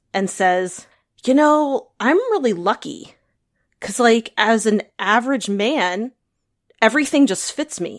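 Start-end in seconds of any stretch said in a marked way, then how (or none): 1.2-8.0 completely sincere, matter-of-fact, dead serious and earnest. Retelling what Neil said: imitating Neil, dead serious. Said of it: "dead serious, in all earnestness".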